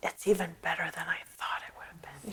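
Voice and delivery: awestruck, very soft, barely audible whisper. Retelling her words on first seeing the iris garden: imitating a whisper. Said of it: "she whispered".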